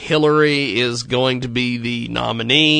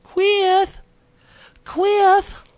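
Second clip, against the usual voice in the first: squeaky, very high put-on mom voice. Telling a story, saying the word in his mother's voice. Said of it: "It's much more funnier to say it in his mother's voice".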